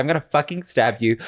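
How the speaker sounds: imitated, angry, threatening tone. Retelling a guy's phone threat to a friend: imitating an angry threat. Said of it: "Middle Eastern guy was so angry".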